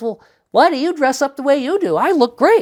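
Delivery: sassy little creature voice. Retelling what a little being replied: sassy little being voice. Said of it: "the little being has a voice like this".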